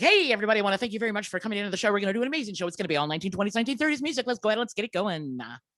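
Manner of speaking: fast, rattled-off auctioneer patter. Showing how he would talk as an auctioneer, fast auctioneer patter. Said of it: "Because you know I can talk really fast".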